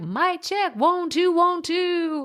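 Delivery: very high, drawn-out radio DJ patter. Podcaster showing the mic check done before recording, pretend radio DJ voice. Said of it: "pretending like I'm a radio D J".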